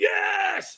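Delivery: mock shrill yell, very high, full voice, all-out. Retelling the final answer to the coach: retelling own scream. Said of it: "I screamed".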